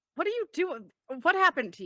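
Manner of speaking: confused, acted bafflement. Voicing a character reacting to an uncharacteristic smile: in character, baffled. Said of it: "she says that in character".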